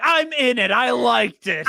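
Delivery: high, loud, excited, proud boastful blurt. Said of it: "Wayne's like".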